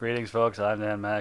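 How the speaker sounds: flat, dull, deadpan, boring read. Podcast host imagining how the intro could be read, deadpan and boring. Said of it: "read it like really deadpan and boring".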